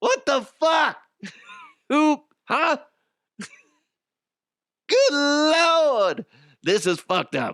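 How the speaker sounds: squeaky, very high put-on celebrity voice, Lord stretched. Retelling how the comedian reacted in the corner: Chris Rock impression. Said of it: "That's my Chris Rock impression".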